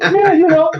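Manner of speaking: acted, very high, winded, out-of-breath hyperventilating. Retelling the moment the audition was stopped: imitating hyperventilating. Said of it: "I'm all hyperventilating".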